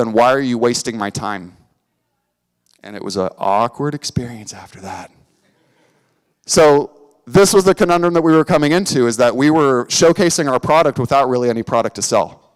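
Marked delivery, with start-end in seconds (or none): 0.0-1.6 mock-deadpan, flat delivery. Recounting an awkward meeting, the speaker quotes a man's deadpan reply. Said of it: "he just looked at me deadpan and said".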